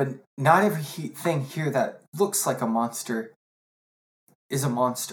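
near tears, fighting not to cry. Voicing a character who pauses to compose herself: holding back tears. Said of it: "She's trying not to cry".

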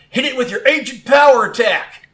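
very high-pitched, loud shout. Voicing a trainer ordering an attack in battle: calling out an attack. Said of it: "Ethan calls out".

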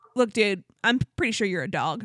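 ordinary talk, nothing marked

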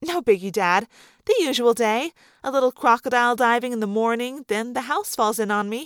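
plain reading voice

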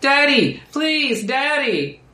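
put-on small girl crying out, very high and pleading. Voicing a girl heard crying out in a graveyard: girl crying out. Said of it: "the girl cry out".

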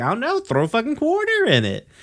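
very high character voice, swooping and swinging around. Retelling a cartoon scene, quoting Mister Smiley's reply: Mister Smiley voice. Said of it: "I was trying to do the Mister Smiley voice there".

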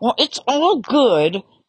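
words forced out through gritted, clenched teeth. Quoting how people sometimes say a buzzword, mimicking clenched-teeth speech. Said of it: "almost with clenched teeth say".

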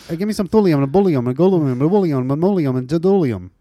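rapid-fire mock scientist jargon, fast rattling delivery. Mocking how scientists rattle off element names, speaking very fast. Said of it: "they say it so fast".

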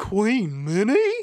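very high-pitched, loud, cartoonish voice. Retelling a cartoon scene to another speaker: Goofy voice. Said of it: "you have the intonation down perfectly".

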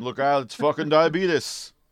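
loud, high-pitched celebrity voice, blurted out. Joking about an Ewok movie line: Wilford Brimley impression. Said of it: "not my best Wilford Brimley impression".

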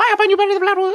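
put-on weird little scream. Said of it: "he goes".

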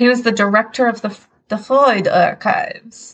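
terrible put-on Austrian accent. Telling the other speaker who a researcher was, in a bad Austrian accent. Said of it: "my terrible attempt at an Austrian accent".

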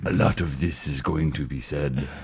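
very low, soft, menacing horror villain baritone. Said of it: "a fairly decent Tony Todd impression".

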